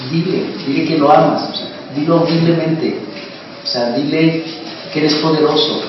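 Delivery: normal talking voice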